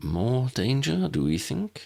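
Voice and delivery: slow, high, secretive, confiding. Narrator reading a character's question to a companion, hushed voice. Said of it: "Ambrose asked Harry in a hushed voice".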